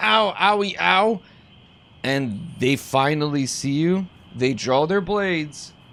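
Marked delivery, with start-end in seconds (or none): 0.0-1.2 high, hammy, overacted fake cries of pain. Describing a character faking a painful fall: overacted pain. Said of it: "as you try to sell the fall".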